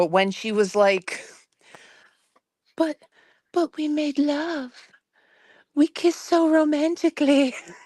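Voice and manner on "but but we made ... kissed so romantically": put-on childish, high-pitched baby talk voice. Speaker mocks what a woman said, imitating her baby voice. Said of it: "she was doing that baby voice".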